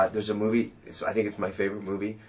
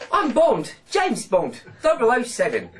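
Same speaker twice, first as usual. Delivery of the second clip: loud, very high, failed English accent; 7 dB louder than usual. Showing that a canadian accent won't transfer, the speaker tries an english accent. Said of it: "just try the English accent".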